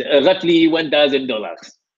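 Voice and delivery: acted French-accented voice. Reading aloud a client's message the way he would read it: imitating Fabian's French accent. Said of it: "my French accent".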